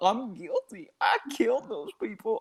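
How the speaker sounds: high pitch swinging up and down. Quoting a line from a video, the speaker does the Goofy voice. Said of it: "the Goofy voice from the video where he's like".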